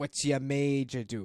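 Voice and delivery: broad, over-the-top bad put-on Boston accent. Joking with friends about boston speech, quoting a line in a broad, bad boston accent. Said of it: "it is crazy broad and like bad".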